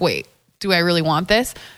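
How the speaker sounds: plain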